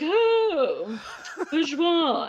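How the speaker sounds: put-on high, swooping posh voice, "Oh" drawn out. Speaker describes the voice they imagined for their adopted pet; bourgeois voice. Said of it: "she had like this very like".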